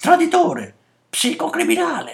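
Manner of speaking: very high, shrill, swooping shout. Reading a story, two children jump around a man with raised hands: shouting.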